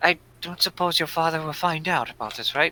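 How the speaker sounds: hushed, in-character half-whisper. Voicing a character asking a companion about the companion's father: half-whispering in character. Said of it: "As he whispers this to you".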